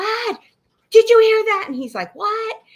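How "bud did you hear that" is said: acted, panicking, blurted voice, high and loud. Retelling what they asked a companion after hearing a growl, imitating panicked voice. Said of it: "And I'm like panicking".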